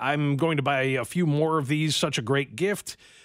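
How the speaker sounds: ordinary delivery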